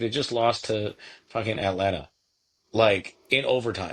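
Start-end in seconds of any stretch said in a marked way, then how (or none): none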